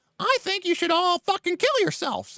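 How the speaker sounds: very high-pitched puppet-like voice. Retelling a kindergarten puppet show, voicing the dummy: Mister Bumpo puppet voice. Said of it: "And Mister Bumpo's like".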